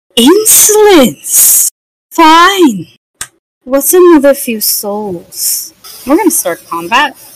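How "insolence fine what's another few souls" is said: slow, affronted, offended villain voice full of disdain. Voicing a skeletal figure whom the party has just refused: offended. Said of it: "He looks offended".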